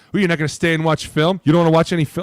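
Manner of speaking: fast, mock needling, goading delivery. Retelling what players who wanted to go home late were told: retelling a teasing taunt. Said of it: "I got to be something like".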